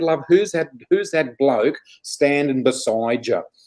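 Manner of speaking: put-on Australian woman's accent. Retelling what a woman said at a hand reading, imitating an australian accent. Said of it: "in her beautiful uh, Aussie accent".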